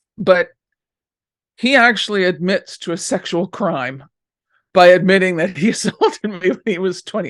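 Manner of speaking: words broken up by laughing. Speaker looking back on a painful past and finding it laughable: laughing while talking. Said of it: "I'm sorry, I'm laughing".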